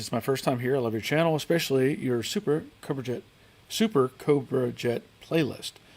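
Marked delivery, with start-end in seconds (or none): none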